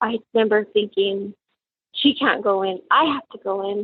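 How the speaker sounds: welling-up, emotional delivery. A mother recalling having to go in to reach her daughter, getting emotional. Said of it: "I get all emotional".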